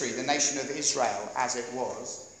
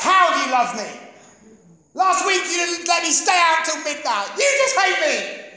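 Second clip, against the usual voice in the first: acted, very high, shrill, loud, bitter and spat out; 14 semitones higher, 9 dB louder than usual. Acting out the sister spitting back at her mum: mock-bitter retort. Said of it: "She bitterly spits back".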